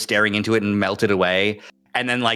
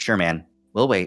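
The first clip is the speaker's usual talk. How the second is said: kind, gently spoken, easy tone. In a role-play, speaker's character answers T J, gently lowered voice. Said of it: "as I lower my voice gently".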